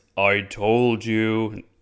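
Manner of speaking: voice that seems to echo. Retelling a scene where Gary speaks to Kirk, in Gary's echoing voice. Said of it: "Gary says in like an echoing voice".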